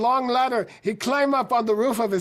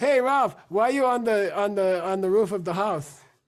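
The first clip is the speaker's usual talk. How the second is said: normal talking voice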